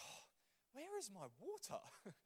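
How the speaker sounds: high, mock, slightly hyperventilating, short-of-breath panic. Retelling a class, acting out the teacher looking for her water; imitating someone hyperventilating. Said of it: "start like hyperventilating a little bit".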